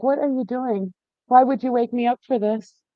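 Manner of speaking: sleepy dog voice. Voicing a dog just woken from sleep: speaking as the woken dog. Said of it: "he was like".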